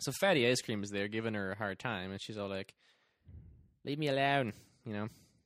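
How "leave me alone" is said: bad put-on Australian accent, higher and louder. Retelling a movie scene where Judy is bothered: bad Australian accent as Judy. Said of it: "That was terrible. I'm sorry".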